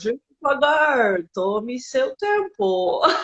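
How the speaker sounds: Portuguese spoken with an imitated English accent. Recalling the phrase most heard on arrival, said in English-accented Portuguese. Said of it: "com aquele sotaque, sabe? Assim, como um inglês, português".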